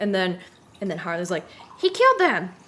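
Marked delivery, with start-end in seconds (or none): 1.8-2.5 annoying put-on female voice, higher and louder. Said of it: "I'm really good at annoying female voices".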